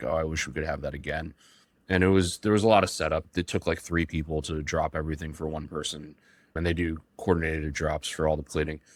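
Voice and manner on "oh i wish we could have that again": imitated very quiet speaking voice. Retelling a mom's remark at the restaurant table: imitating someone speaking very quietly. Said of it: "very quietly was like".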